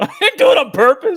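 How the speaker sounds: high, loud, laughing protesting tone.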